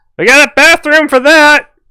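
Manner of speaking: very high, squeaky, loud, drawn-out gnome voice. Narrating a game, the speaker voices a gnome the players only hear, in gnome voice. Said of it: "you hear the voice of a gnome".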